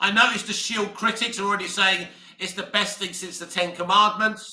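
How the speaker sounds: ordinary talk, nothing marked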